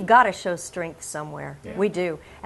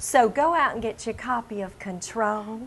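Southern-accented voice; 4 semitones higher than usual. Host plugging a book to listeners, southern accent. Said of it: "I should say this in a southern accent".

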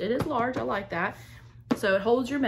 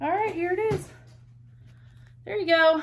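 breathless, short of air, slightly high-pitched; 9 semitones higher, 4 dB louder than usual. Just back from downstairs, presenting the item to everyone, out of breath. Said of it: "Sorry, I'm out of breath".

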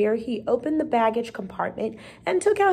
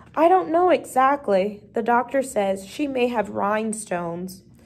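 plain reading voice

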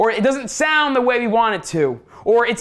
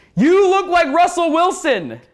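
play-acted, high-pitched scream; 7 semitones higher than usual. Telling how a man on a bicycle waved him down mid-run: retelling a man's scream. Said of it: "he screams".

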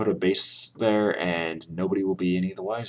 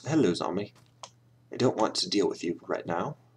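bad, poorly done British accent; 3 dB quieter than usual. Greeting a zombie in the game: bad British accent. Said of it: "That was the worst British accent I've ever heard".

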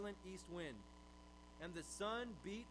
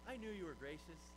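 kind, gentle, tender tone. Imagining how he'd say that line, mock nice tone. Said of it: "You'd think he'd be saying that with a nice tone".

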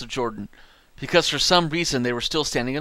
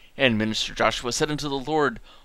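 usual speaking voice

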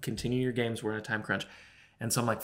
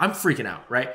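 plain

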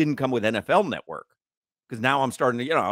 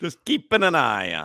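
put-on Italian accent, higher; 3 semitones higher than usual. Trading a repeated joke line with another speaker, talking like the Mario Brothers. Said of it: "we're talking like the Mario Brothers".

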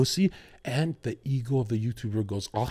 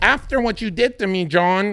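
put-on New Jersey accent; 9 semitones higher, 7 dB louder than usual.

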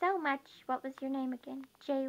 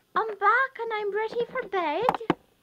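very loud, high, put-on Irish accent; 8 semitones higher, 8 dB louder than usual. Told it's time for bed, replying in an irish accent. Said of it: "Please don't tell me that you're Irish now".

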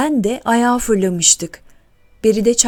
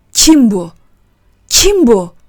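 loud, drawn-out shout carrying across the room; 2 semitones higher, 7 dB louder than usual. As a woman bursts into the Milas coffeehouse, Osman shouts: shouted. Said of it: "diye bağırdı".

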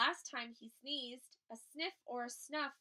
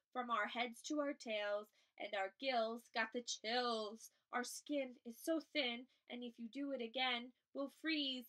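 ordinary delivery

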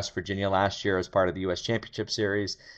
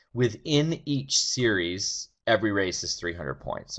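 slowed, deliberate, a little slower delivery. Explaining how race-series points work, speaking a little slower. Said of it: "I'm going to speak a little slower".

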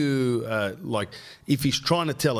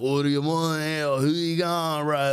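put-on very heavy, thick Australian accent, pitched up; 5 semitones higher than usual. Describing a younger bodyboarder from surfing days, the speaker imitates him with a thick heavy accent. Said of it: "thick accent".

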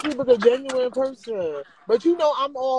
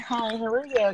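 courteous, polite professional voice; 3 dB quieter than usual. Trying out a professional voice on request by greeting someone: professional voice. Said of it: "my professional voice".

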